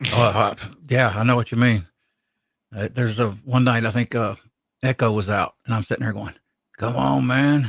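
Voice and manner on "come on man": grumbling to oneself. Retelling a night sitting alone, waiting: imitating muttering under breath. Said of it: "under my breath".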